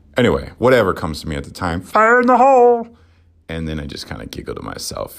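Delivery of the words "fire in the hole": very high, loud put-on old man voice. Speaker showing what they shout in the shower, in an old man voice. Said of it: "A lot of times I'll sound like an old man".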